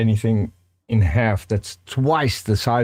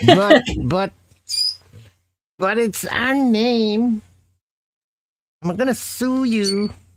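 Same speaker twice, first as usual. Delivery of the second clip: silly, very high put-on voice, one word stretched; 13 semitones higher than usual. A speaker doing a bit for the audience, in a funny voice. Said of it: "because I'm doing a funny voice".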